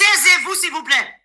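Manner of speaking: loud high-pitched shouting.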